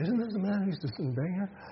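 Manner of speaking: high, fast, astonished, gossipy voice. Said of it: "Picture this in your mind".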